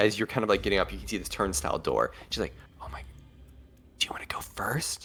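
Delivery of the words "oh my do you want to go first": hushed whisper, very quiet, close in the ear. Voicing a character who asks a player to go first: whispering. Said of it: "whispers in your ear".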